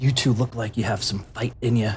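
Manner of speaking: hushed quiet voice. Game master voicing Adventure as he comes up to the two players: hushed tone. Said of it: "in a hushed tone".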